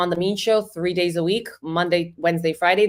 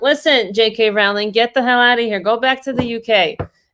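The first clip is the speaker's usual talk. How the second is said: loud, mock heckler-style yelling; 4 semitones higher, 5 dB louder than usual. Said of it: "I start yelling back at them".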